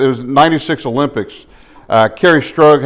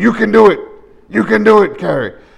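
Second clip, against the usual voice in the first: put-on high, encouraging voice with a European accent; 8 semitones higher than usual. Retelling a man cheering on a woman with a badly injured ankle, Bela Karolyi impression. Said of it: "He's got this accent where".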